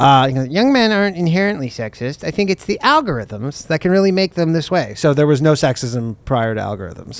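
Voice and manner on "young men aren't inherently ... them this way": dorky, nerdy put-on dweeb delivery. Quoting a man's statement from an article in a mocking dweeb voice. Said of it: "let me say more dweeb voice".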